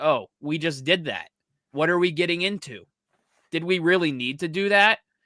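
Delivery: ordinary talk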